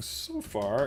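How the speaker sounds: slow delivery, voice cracking partway through. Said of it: "my voice cracked".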